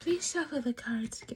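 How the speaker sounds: very courteous, over-polite, mannerly tone. Acting out how a Pisces would ask for a reshuffle: imitating a polite Pisces. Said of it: "Pisces are like".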